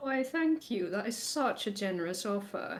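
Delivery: faux-polite, overly gracious, heavily sarcastic tone. Voicing a character thanking someone who slammed food down: sarcastic in character. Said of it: "this might be sarcasm".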